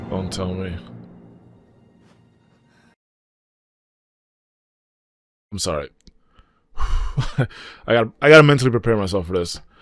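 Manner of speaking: tearful, weeping, crying voice. Streamer watching an anime, worried about Nezuko, crying.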